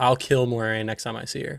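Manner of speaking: ordinary delivery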